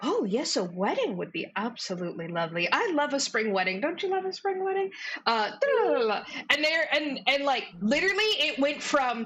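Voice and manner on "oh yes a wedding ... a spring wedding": many voices chattering and murmuring together. Voicing the court crowd gossiping about a wedding: murmuring crowd gossip. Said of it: "again start murmuring".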